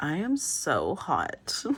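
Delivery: very slow, swooping, self-adoring, preening, drawn-out voice. Describing a tarot card's figure who is so into themselves: put-on vain self-admiring voice. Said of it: "I don't know why I'm doing that voice".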